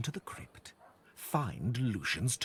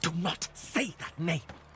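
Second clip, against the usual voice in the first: high, angry hissed tone; 7 semitones higher than usual. Reading a story aloud, the narrator voices the doctor's reply as an angry hiss. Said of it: "He hisses in anger".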